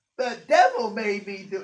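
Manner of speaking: very loud, belted, classic sitcom sassy voice. Describing a TV character's catchphrase reply when asked why: Geraldine's classic sassy voice. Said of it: "in that kind of classic sassy voice".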